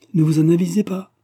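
high, loud, frightened outcry. A woman reacts to a man's ironic question, frightened exclamation. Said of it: "s'exclama-t-elle effrayée".

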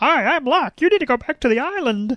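cartoon felt-frog puppet voice, high pitched. Joking about a TV plot, do Locke as a hand puppet in a Kermit the Frog voice. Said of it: "Locke sounds surprisingly like Kermit the Frog".

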